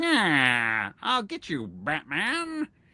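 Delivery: slow, swooping villain voice, yeah dragged out. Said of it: "that voice gives an entirely different feel".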